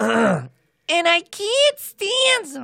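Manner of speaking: shrill, drawn-out, swooping, sing-song voice. Asked by the other host to end the episode, saying it in a Lena Lamont impression. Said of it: "Can you just say in your best Lena Lamont impression".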